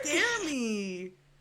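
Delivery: yelped, half-shouted, mild outburst. Telling another character on the phone they don't scare her: yelling. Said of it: "I need to stop yelling".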